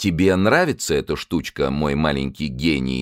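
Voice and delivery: ordinary delivery, nothing marked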